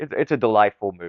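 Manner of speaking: ordinary talk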